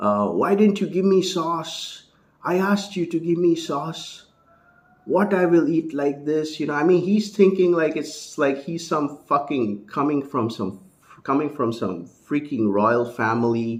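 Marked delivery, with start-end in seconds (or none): 0.3-6.6 high, furious, raging screaming. Retelling an airport scene where a tourist screamed at staff: imitating a man screaming. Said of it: "he started screaming at the".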